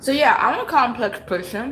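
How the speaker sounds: words around a full mouth. Speaker talks while sipping tea, then apologizes, talking with mouth full. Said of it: "Let me not speak with my mouth full".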